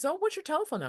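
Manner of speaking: high, quick, pitch rising at the end. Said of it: "So they go up at the end".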